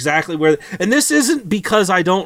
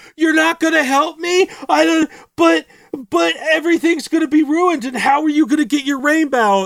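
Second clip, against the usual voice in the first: mock screaming, much higher pitch; 12 semitones higher than usual. Retelling a character pleading for help, imitating someone screaming. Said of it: "staring because he's screaming about this".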